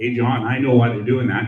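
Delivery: normal talking voice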